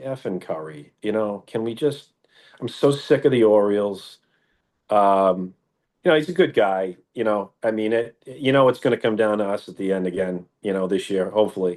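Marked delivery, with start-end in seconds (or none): 0.0-4.2 put-on muttering under the breath. Imitating a competitive rival cursing quietly: imitating Andy muttering under his breath. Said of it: "under his breath, he's going".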